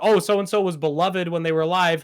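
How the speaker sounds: ordinary talk, nothing marked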